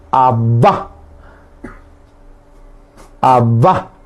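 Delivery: abba with the last A stressed, lifted and rising.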